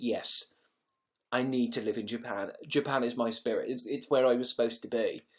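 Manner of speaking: ordinary talk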